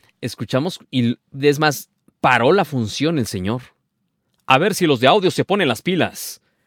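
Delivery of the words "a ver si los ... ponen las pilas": mock stern scolding, pitched up. Retelling how a man stopped a theater show to address the sound crew, scolding them. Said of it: "Así regañándolos".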